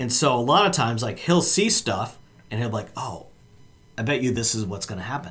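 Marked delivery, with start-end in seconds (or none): 3.0-5.3 put-on whisper, said much too loudly. Retelling how a friend guesses plot twists at the movies: imitating Glenn's too-loud whisper. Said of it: "he'll kind of whisper it, but, but a little too loudly".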